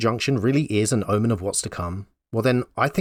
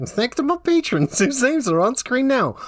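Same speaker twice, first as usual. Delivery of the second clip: put-on cowboy accent, pitched very high; 14 semitones higher than usual. Closing a video, the speaker thanks patrons in a cowboy accent. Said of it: "This is my cowboy accent".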